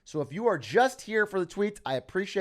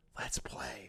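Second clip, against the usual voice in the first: very quiet, hushed, breathy whisper; 5 semitones lower, 13 dB quieter than usual. Retelling a chess pickup line, leaning in: imitating a whisper.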